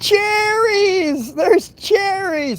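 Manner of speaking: put-on scream, pitched very high, excited. Retelling how a three-year-old brother screamed from the dumpster: imitating a child screaming.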